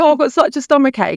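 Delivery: high tearful crying. Retelling an ill friend's complaint: imitating someone crying.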